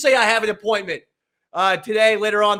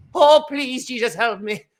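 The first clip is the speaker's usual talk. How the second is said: fake Irish accent, pitched higher; 3 semitones higher than usual. Praying to Jesus for help, in a put-on Irish accent. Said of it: "I'm even going into an Irish accent today".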